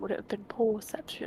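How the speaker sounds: conspiratorial whisper, no voice at all.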